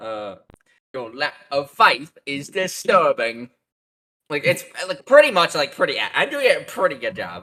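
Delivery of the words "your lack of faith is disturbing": cheesy put-on British accent. Speaker performs a quoted movie line for the others: cheesy British voice. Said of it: "this cheesy British voice".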